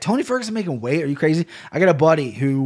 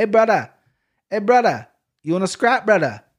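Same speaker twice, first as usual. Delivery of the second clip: put-on Hawaiian island accent, higher, slower; 6 semitones higher than usual. Describing someone who moved to Hawaii, trying out a Hawaiian accent. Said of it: "That's not too bad, right?".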